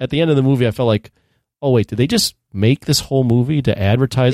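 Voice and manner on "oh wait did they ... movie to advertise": ordinary talk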